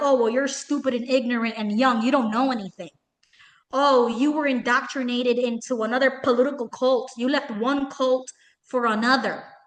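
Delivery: sneering, sarcastic, mocking, condescending voice. Imitating a commenter's reply to the speaker: imitating sarcastic mockery. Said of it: "You can see the sarcasm, the mockery".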